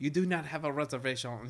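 put-on French-accented English. Retelling a movie scene as the french guy: imitating the french guy. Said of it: "the French guy who's like".

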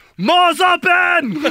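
very high, shrill, open, drawn-out squeal. Joking with the other speaker: bad Schwarzenegger impression.

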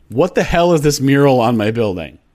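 ordinary talk

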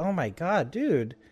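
put-on upbeat, peppy vlogger voice. Imitating an overly upbeat skateboard vlogger's greeting: imitating John Hill's upbeat peppy vlogger voice. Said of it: "he was this upbeat, peppy, like, bright-eyed".

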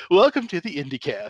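polished, easy, smooth professional radio announcer voice. Comparing their podcast intros, the speaker imitates the co-host's smooth, professional intro. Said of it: "you actually come in very professional and very smooth".

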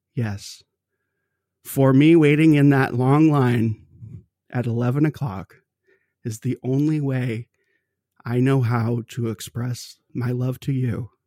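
normal talking voice

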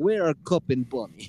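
put-on Russian-accented speech. Showing how they always voice two toys, in a russian accent. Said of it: "we always say it in a Russian accent".

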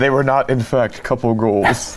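very low, deep documentary narrator voice. Reacting to a story about an awkward gift, the speaker announces and uses a narrator voice. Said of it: "Narrator voice".

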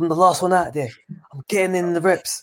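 mock intense ranting. Retelling how a boxer rants with his eyes fixed: imitating a fixed-eyed rant. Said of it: "he goes on that rant with his eyes all, like, fixed".

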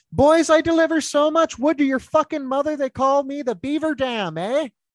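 chirp pitched very high. Retelling a TikTok clip of someone doing the Shoresy voice. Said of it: "someone just doing the Shoresy voice".

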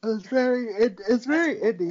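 words stretched by a yawn. Talking about a wrestling show's crowd, yawning while talking. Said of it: "Sorry, I'm yawning".

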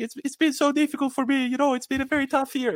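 very high-pitched, funny, whiny put-on voice. Recalling Bernardeschi's interview after the Euro win, doing Bernardeschi's funny voice. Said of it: "he's got this very funny voice".

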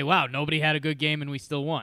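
ordinary talk, nothing marked

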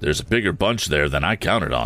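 ordinary talk

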